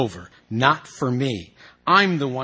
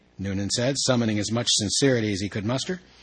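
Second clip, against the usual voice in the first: plain reading voice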